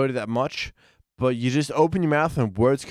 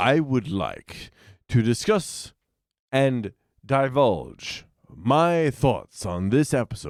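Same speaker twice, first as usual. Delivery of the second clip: put-on announcer voice. Asked by Shag to rank this thing, answer with a Richard Moorcroft impression. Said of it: "I'm working my Richard Moorcroft".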